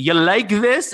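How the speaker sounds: heavy, thick put-on Russian accent. Retelling what a naked intruder on a call said: thick Russian accent. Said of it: "naked dude with a thick Russian accent".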